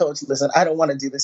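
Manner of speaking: ordinary talk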